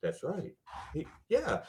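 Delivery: tiny little voice, whispered under the breath. Retelling a guy fact-checking a set on his phone: imitating a little voice. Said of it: "I'd hear this little voice go".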